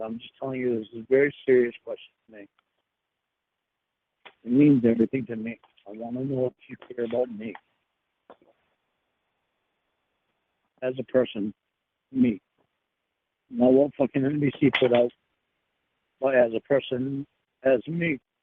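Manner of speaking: low voice, straining not to cry. Asking the other speaker a very serious question, holding back tears. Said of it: "Are you crying?".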